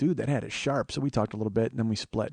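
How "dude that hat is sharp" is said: ordinary talk, nothing marked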